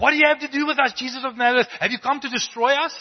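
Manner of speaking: terrified demon shriek, very shrill, very high, loud. Speaker reading aloud what a demon says to jesus, fearful demon voice. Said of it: "you can just hear the fear in his voice".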